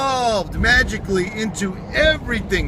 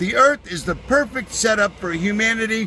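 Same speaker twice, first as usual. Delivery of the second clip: ordinary talk, nothing marked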